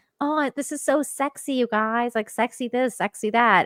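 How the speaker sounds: unhurried, slow, drawn-out chatty way of talking. Imitating how a woman talks in her interviews: imitating how she talks. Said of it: "that's how she talks".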